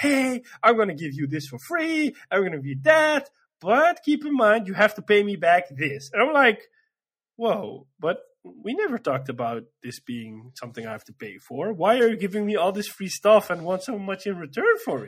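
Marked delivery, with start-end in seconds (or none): 0.0-6.1 put-on slick, silky, smooth-talking salesman patter. Complaining that a game character is a crook; smooth-talking Tom Nook impression. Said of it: "he just talks so smooth".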